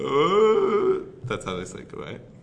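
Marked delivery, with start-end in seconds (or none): 0.0-1.0 high, loud creature call. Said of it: "That was my Wookiee impression".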